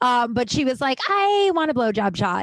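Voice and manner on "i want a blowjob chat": mock, irritating, high-pitched annoying girl voice. Retelling a girl's drink order to the manager at a bar, mocking a girl's voice. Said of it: "I'm going to use that voice because this girl sucked".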